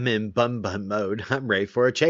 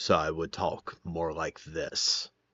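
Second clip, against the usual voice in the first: pitch lowered an octave, lower and quieter; 5 semitones lower, 6 dB quieter than usual. Showing how the voice shifted down for a werewolf role: voice down an octave. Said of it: "shift my voice down an octave".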